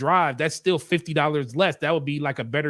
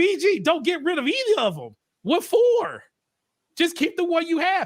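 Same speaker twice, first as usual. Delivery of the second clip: shrill rising-falling scream; 13 semitones higher than usual. Retelling watching a creator's video and screaming at the screen, re-enacted scream. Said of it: "And I'm screaming at the screen like".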